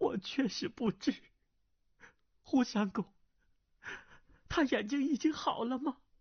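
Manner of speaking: very high, quavering, trembling pleading voice. A woman answers a man who has just threatened her and ordered her away; trembling voice. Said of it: "南兰颤声道".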